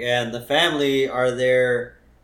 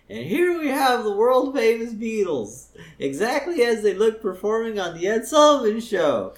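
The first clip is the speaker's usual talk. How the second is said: put-on squeaky teenager voice, pitched very high; 9 semitones higher than usual. Retelling a Springfield scene, the teenager leading a wax museum tour; squeaky teenager voice. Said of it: "with the squeaky voice".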